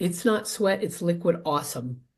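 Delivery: ordinary talk, nothing marked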